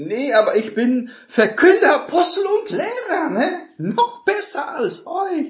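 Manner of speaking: vain, boastful, very high, slow bragging voice.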